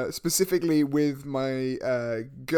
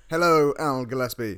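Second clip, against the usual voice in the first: mock-serious, put-on serious voice. A show host greets his co-host, doing a serious Al Gillespie voice. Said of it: "Serious Al voice".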